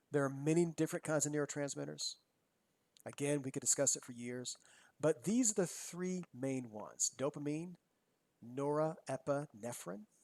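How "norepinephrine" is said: norepinephrine said slowly and carefully, syllable by syllable. Speaker lists the three main neurotransmitters, saying this one slowly. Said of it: "always have to say it slow".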